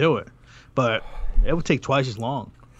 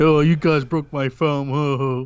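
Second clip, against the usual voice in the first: mocking idiot's voice; 2 semitones higher, 4 dB louder than usual. Imitating some idiot who will try it anyway: imitating some idiot. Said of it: "some idiot who's gonna try anyway".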